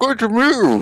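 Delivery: talking with mouth full. [name] greets Theo as he walks in, talking with a mouth full. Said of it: "he says with a mouthful of roll".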